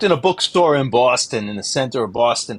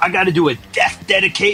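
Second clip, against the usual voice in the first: put-on angry DJ voice, pitched higher; 6 semitones higher than usual. Retelling a DJ's backstage complaint, imitating an angry Casey Kasem. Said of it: "he's pissed at one thing".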